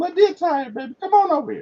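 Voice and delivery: very high, coaxing, down-home dialect voice. Recalling how a woman always spoke of herself in third person, imitating her. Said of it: "So she'd be like".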